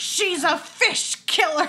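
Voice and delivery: sudden, acted, high, loud, shrill, shrieking yell. Speaker retelling a scene where the starfish cries out: imitating Allison Janney's starfish yell. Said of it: "just yells".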